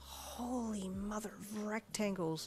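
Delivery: hushed, soft half-whisper under the breath. Narrator reading a character's line on entering a dining room, hushed half-whisper. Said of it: "you whispered in a hushed tone".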